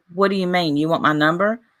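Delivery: plain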